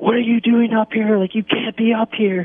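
mock, very high, screamed scolding tone. Retelling a female security guard bursting through the door: imitating someone screaming. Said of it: "she's like screaming at me like".

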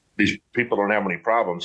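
plain

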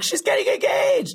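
screaming with excitement. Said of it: "she starts screaming in public".

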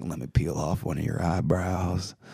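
smooth, charming, low and soft charmer voice. Showing what "Matthew McConaugheying" sounds like: Matthew McConaughey impression. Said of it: "it's called Matthew McConaugheying".

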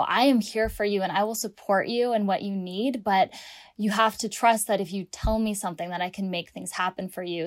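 usual speaking voice

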